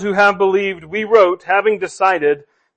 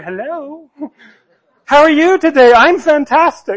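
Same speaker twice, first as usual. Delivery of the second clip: put-on, slow, sweet, high, over-polite phone voice; 7 semitones higher, 3 dB louder than usual. Acting out answering a phone call mid angry day: put-on overly polite phone voice. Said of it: "in the best, most polite voice ever".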